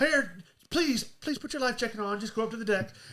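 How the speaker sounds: put-on gentle, polite tone. Describing crew warning the rich people to go upstairs: mock-gentle polite voice. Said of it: "the rich people get it all gently".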